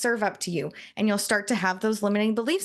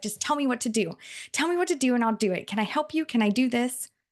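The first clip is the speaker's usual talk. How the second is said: put-on eager five-year-old child voice; 3 semitones higher than usual. Describing a young child who follows you around, imitating an eager young child. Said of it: "like a five or a six year old".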